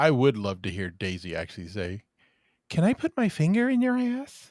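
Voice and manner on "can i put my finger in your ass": high, squeaky little voice. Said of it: "That little squeaky voice".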